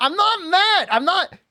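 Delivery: high-pitched shouting. Speaker talking while playing a game, yelling. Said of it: "I know I'm yelling".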